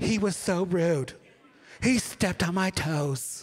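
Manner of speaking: very slow middle-aged woman's voice, words drawn way out. Doing an impression while complaining someone stepped on her toes, in a middle-aged woman voice. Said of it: "I sound like a middle-aged woman".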